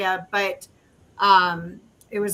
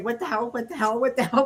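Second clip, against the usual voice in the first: mock frantic, freaked-out, fast panicked repeating. Recalling lying in bed when something pushed the covers down, retelling freaking out. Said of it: "I'm like freaking out".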